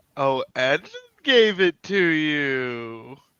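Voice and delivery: insinuating, knowing tone. Reacting in character to hearing who gave the patch: insinuating tone. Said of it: "Why does everyone keep using that tone".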